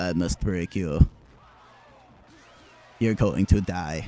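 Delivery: careless, offhand, casual menace. Imitating Ivan Drago saying threats without caring: imitating Ivan Drago not caring. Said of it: "he just didn't give a shit".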